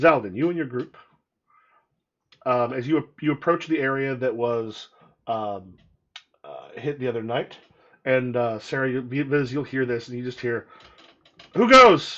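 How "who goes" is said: nervous, jittery, shrill, very high, loud shout. Game master voicing a man who challenges the approaching party: nervous guard voice. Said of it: "You see the nervous-looking man with a torch".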